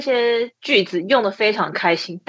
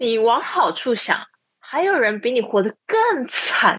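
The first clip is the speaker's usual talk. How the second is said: catty, mean, sour villainess voice; 2 semitones higher than usual. Asked by the others to deliver the line again, in a mean woman's tone. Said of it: "用坏女人的语气".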